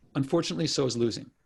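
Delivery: ordinary delivery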